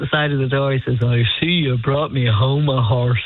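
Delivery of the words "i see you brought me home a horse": put-on thick country accent. Retelling the man's first words on seeing the big dog: rural cabin accent. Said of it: "with a wonderful cabin accent".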